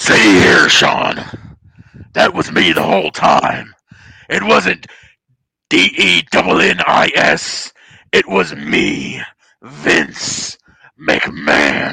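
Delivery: rough, loud bellow with swooping pitch. Doing a requested impression for another speaker: Vince McMahon voice. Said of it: "that's me doing the Vince voice".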